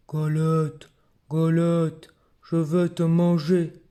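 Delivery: big, deep, growling bear voice. Narrating a children's tale, the bear speaks to the galette: deep growling bear voice. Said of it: "Grogne l'ours de sa grosse voix".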